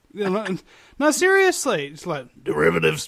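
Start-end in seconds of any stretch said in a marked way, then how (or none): 2.4-3.1 croaky, throat-clearing, broken-frog voice. Showing how to clear the throat by saying one word: Alex Jones impression. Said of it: "do an Alex Jones impression and say the word derivatives".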